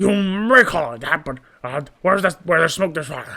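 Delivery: loud, silly, cartoonish put-on goofy voice. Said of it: "I think I'm doing too too like goofy of voices".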